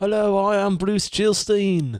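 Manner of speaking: put-on British accent, very high and slow. Imagining a retired politician introducing herself on tour, put-on British accent. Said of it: "Why is she British?".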